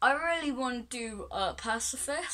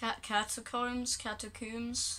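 ordinary talk

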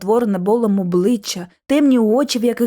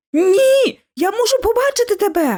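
very high, pressing, insistent tone; 11 semitones higher than usual. Narrator voicing her own line to a figure in the darkness, insisting. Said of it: "наполягала я".

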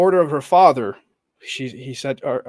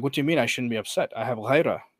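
ordinary talk, nothing marked

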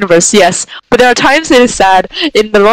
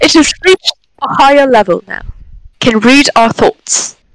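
put-on British English accent. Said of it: "With British accent".

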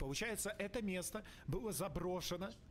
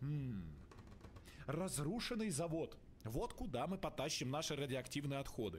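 plain

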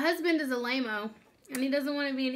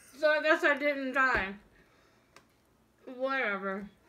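talking with mouth full. During a cracker-eating challenge, talking with mouth full. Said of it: "I still have food in my mouth".

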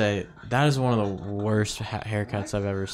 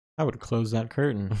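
ordinary talk

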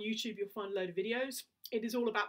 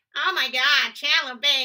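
very loud, slow, ringing voice with full twang; 4 semitones higher, 14 dB louder than usual. Showing how to develop ring in the voice: Janice from Friends impression. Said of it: "do an impression of Janice from Friends".

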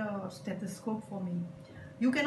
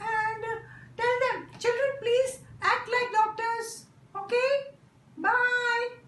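very high, loud put-on puppet voice; 14 semitones higher, 5 dB louder than usual. A puppet speaks to the children, in a puppet voice. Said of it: "A puppet is used to explain".

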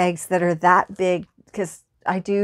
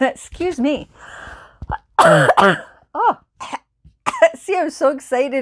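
choking and coughing while talking, higher; 6 semitones higher, 4 dB louder than usual. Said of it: "I'm choking".

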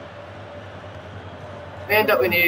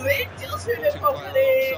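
high, slow mocking jeer.

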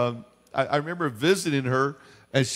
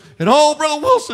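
mock excited, thrilled outburst, very loud and high; 14 semitones higher, 10 dB louder than usual. Retelling an old woman's story of praising God: imitating excited speech. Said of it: "She got all excited and all".

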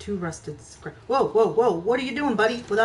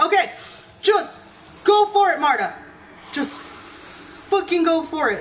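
frightened, scared, slow self-encouraging delivery; 8 semitones higher, 4 dB louder than usual. Talking to viewers, she urges herself on as zombies appear: scared. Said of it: "I'm so scared".

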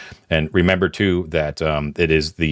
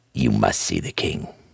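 serious put-on voice, much lower; 8 semitones lower, 3 dB quieter than usual. Acting out Gangrene gripping your shoulders at the end; retelling him very seriously. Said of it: "he says it very seriously".

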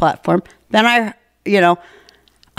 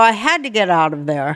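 plain

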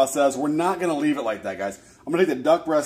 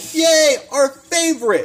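put-on very high, loud, thrilled kids' cheering yell; 13 semitones higher, 6 dB louder than usual. Retelling how the kids reacted to dinner: imitating kids yelling. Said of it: "they both yelled".

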